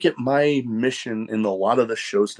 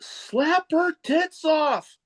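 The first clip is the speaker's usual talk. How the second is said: play-acted shrill, very high, loud yell; 3 dB quieter than usual. Recounting shouting out in a quiet moment at a wrestling match, retelling a yell. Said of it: "And I yelled out".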